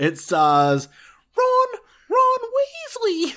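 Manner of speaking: voice cracking. Naming the film's cast: voice cracking. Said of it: "Did you hear my voice just crack".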